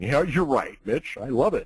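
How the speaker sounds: voice dropped deep. Retelling how the co-author answers teasing: Mark Victor Hansen deep voice. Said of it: "with his deep voice".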